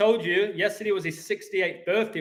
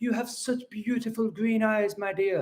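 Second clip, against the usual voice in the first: British English accent; 2 semitones higher than usual. Showing how Americans love to hear an Englishman speak, in a put-on Englishman's accent. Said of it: "when they hear an Englishman speak like this".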